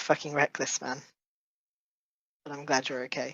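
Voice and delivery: whispering voice. Voicing a character hugging a friend after danger: whispering in character. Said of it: "just whisper".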